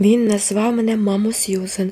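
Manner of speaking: ordinary delivery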